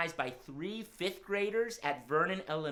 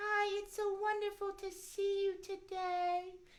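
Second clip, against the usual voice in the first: very high, squeaky, tiny mouse voice; 14 semitones higher, 4 dB quieter than usual. Greeting the children after being called out: Miss Mousie voice. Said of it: "Let's call out my friend Miss Mousie".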